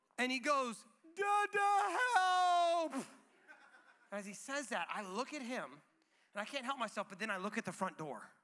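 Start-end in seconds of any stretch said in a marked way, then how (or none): 1.2-3.0 acted, high, loud crying scream, "dada" drawn out. Retelling how he called out after landing on his back, imitating crying and screaming. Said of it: "in his crying and screaming".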